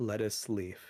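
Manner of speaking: mock dry, flat, inflectionless deadpan with no expression. Retelling what is said at the door before leaving: deadpan delivery. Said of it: "I just look at her deadpan".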